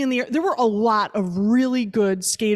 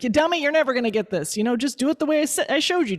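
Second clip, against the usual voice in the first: put-on yelling; 4 semitones higher than usual. Recounting how a friend yelled at someone who kept failing, retelling a friend's yelling. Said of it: "yelling yelling at them".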